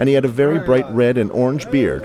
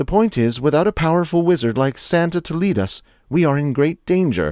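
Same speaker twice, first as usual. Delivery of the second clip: soft squeaky woman's voice, much higher pitch; 4 semitones higher than usual. Reading a woman's line in a story, soft squeaky womanly voice. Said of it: "she squeaked out in a soft, womanly voice".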